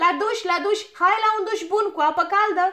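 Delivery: loud, high-pitched shouting. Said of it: "Strigă ea".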